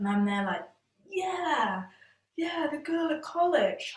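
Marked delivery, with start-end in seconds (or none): 1.1-4.0 uneasy, nervous, pitched-up, drawn-out voice. Speaker retells going along with an excuse while sweating, imitating nervous agreement.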